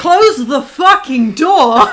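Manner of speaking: yelled at full volume. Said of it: "I'm gonna go".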